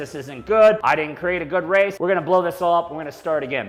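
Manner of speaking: usual speaking voice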